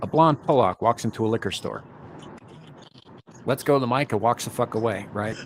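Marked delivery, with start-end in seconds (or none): none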